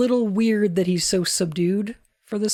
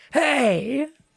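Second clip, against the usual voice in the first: imitated curt, authoritative, mean-sounding shout; 4 semitones higher than usual. Repeating a character's line: imitating a mean-sounding shout. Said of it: "Why did you sound so mean?".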